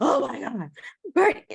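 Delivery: very high, sobbing boo-hoo crying, pleading tone. Retelling a cousin's call, imitating someone crying. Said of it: "she called me crying, boo-hoo crying".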